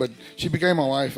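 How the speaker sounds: ordinary talk, nothing marked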